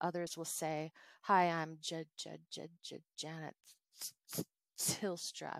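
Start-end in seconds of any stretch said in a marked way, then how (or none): 1.2-5.6 deliberate stutter, much slower. Demonstrating how a person who stutters might introduce themselves, with a voluntary stutter. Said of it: "do a voluntary stutter".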